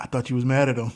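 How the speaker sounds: put-on whisper. Retelling what the mother said while getting in the car: imitating a whisper. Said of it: "my mother whispers to me".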